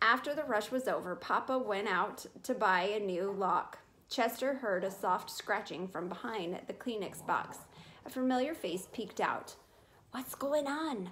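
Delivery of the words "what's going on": hushed half-whisper. A mouse peeks out from hiding to ask his friend: half-whispering. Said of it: "whispered Tucker Mouse".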